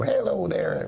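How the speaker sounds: put-on high-pitched old woman voice. Imitating an improv comic's old lady character: Marty Frickert old lady voice. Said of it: "as an old lady, and he'd go".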